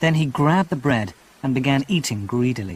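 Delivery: ordinary delivery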